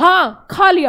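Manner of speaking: sharp, clipped and loud.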